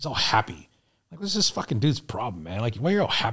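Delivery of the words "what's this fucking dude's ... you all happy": mock irritated tone, quieter. Speaker retells his reaction to a smiling, happy SEAL, retelling irritation. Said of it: "I was really irritated by him".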